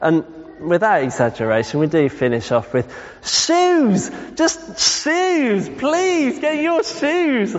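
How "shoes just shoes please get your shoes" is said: exasperated, shrill, very high, slow drawn-out yelling. Giving a thought experiment, acting out the last request to the children: exasperated shouting. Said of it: "you can feel the kind of emotion".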